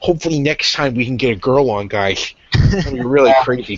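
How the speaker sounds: exaggerated, super nerdy put-on character voice. Speaker addressing the guys, super nerd voice. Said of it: "I'm actually gonna put on my uh, my uh, my super nerd voice".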